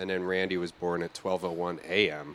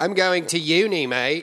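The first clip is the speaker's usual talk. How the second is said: very high, loud, put-on Australian accent; 10 semitones higher, 8 dB louder than usual. Joking about what Australians call university: mock Australian accent. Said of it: "But not Australian colleges".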